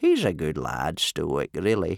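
put-on low wheezing voice. Reading aloud, the narrator voices old Wrinkly as they watch Stoic leave, wheezing. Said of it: "wheezed old Wrinkly".

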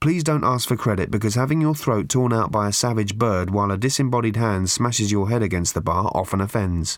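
plain reading voice

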